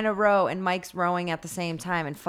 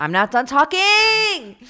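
very loud, high, drawn-out yell; 10 semitones higher, 9 dB louder than usual. Cutting off the other speaker's joke: loud outburst. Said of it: "that was loud in someone's ear".

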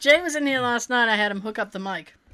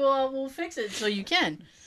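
ordinary delivery

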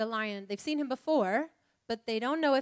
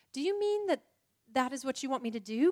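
gasped, with a gasp; 3 semitones higher than usual. Narrator reads a girl questioning a figure who has reappeared to her, gasped. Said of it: "gasped Lucy".

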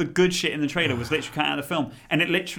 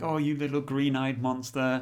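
teasing, scornful, mocking taunt; 4 dB quieter than usual. Retelling a film scene where she teases him: imitating a mocking taunt. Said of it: "she's making fun of him".

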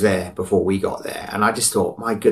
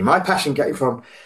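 words catching in the throat, throaty frog; 6 semitones higher than usual. Answering a question from another speaker, with a frog in the throat. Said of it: "it's got something back in my throat".

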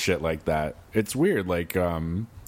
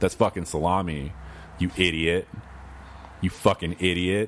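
plain

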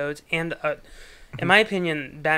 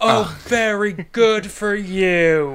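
very slow, loud, stretched-out furious berserk rant; 4 semitones higher, 7 dB louder than usual. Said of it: "had his berserker moment on the Terminator set".

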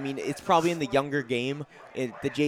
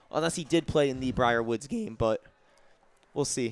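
voice cracking and breaking. Commentator calling a Wolverines football game, voice cracking. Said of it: "Sorry there for the a little voice crack here".

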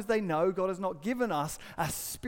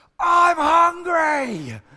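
rude, very high, very loud shout, words stretched; 9 semitones higher, 12 dB louder than usual. Retelling how your middle son ran in and interrupted your conversation, imitating a son shouting. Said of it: "started shouting at me".

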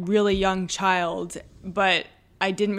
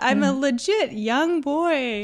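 fake little boy voice, higher; 6 semitones higher than usual. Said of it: "And I talk like this".

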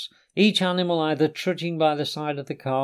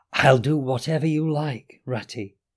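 shy creature whisper, slower. Mole, squeezing the rat's paw in the darkness: soft, whispered Mole voice.

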